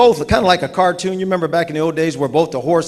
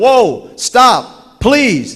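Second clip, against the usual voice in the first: play-acted frantic, desperate yelling, high-pitched; 6 semitones higher, 4 dB louder than usual. Telling a joke, the farmer yelling at his runaway horse: imitating a farmer yelling. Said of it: "He's yelling".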